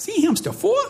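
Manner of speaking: put-on high, squeaky toddler voice. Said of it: "in her little squeaky toddler voice".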